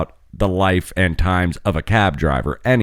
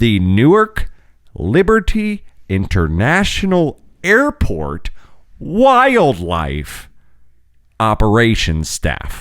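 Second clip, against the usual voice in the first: drawn out very slowly, deliberately, word by word; 3 semitones higher than usual. Repeating a long agency name for everybody, slower. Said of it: "say it again slower".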